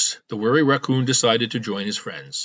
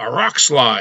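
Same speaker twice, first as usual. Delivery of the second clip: growling delivery, words growled out; 4 dB louder than usual. Reading a story aloud, the narrator voices the train engineer's answer, growled. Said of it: "growled the engineer".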